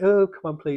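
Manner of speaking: mild whine. Redoing own plea for more followers as a whine: mock whining. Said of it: "that was me whining".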